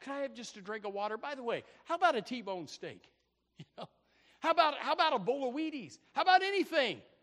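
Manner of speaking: mock-excited, imitated excitement. Acting out what he says on reaching the widow woman; retelling an excited request. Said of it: "and he's all excited".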